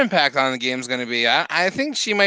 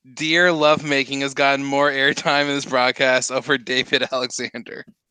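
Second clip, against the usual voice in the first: ordinary talk, nothing marked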